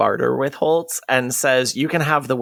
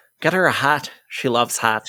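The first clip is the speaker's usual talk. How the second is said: rough, bad, put-on Irish brogue. Quoting a character's line, attempting an Irish accent. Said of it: "That was my attempt at an Irish accent".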